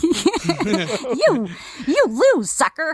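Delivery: high, sing-song, insulting talking-parrot voice. Describing a game parrot that insults your enemies, in a Quest for Glory V parrot voice. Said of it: "That's a pretty good parrot".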